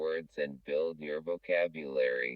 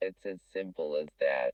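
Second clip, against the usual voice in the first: ordinary talk, nothing marked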